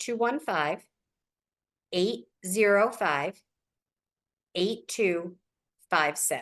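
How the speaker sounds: very slow, drawn-out, deliberately spaced reading. Speaker giving out their phone number so listeners can write it down, really slowly. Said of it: "I say that real slow".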